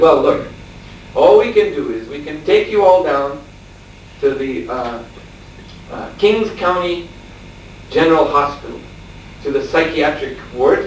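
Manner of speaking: normal talking voice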